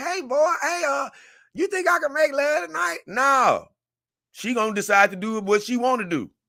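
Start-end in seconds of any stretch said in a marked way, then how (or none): 0.0-3.0 put-on high old mother voice. Making a point, the speaker acts out his mom asking him a question; imitating his mom. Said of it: "I'm sorry about giving you that old voice".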